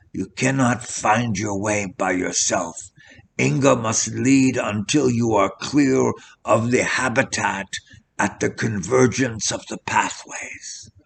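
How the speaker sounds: quiet whispering. A narrator reads a character's warning as night falls, whispered caution. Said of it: "and on the low porch stood Herr Sterngucker".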